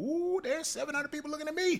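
high, wide-eyed, jittery, nervous squeak.

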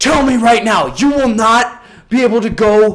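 loud, shrill, screaming, threatening tone. Retelling how he screamed at them after a kid pooped in a urinal, imitating him screaming. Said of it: "He starts screaming even more".

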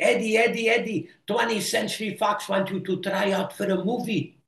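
put-on very high-pitched Belgian accent. Retelling his mom's phone call to him in Milwaukee, in her Belgian accent. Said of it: "with her Belgium accent".

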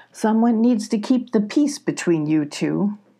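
plain

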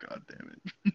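sighing, let-down, disappointed curse. Retelling a mom's reaction to her kid's Reddit gold, imitating a sigh. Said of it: "she just sighs, and she's like".

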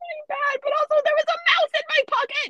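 shrill, very high, loud panicked outburst. Finding a mouse-eaten hole in a sweatshirt pocket, freaking out. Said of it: "I'm kind of freaking out right now".

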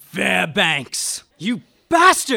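loud, slow furious shout.

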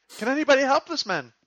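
desperate, distressed pleading tone, pitched very high. Speaker joining a staged distress act, calling for help, distressed pleading. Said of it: "start seeming like maybe distressed".

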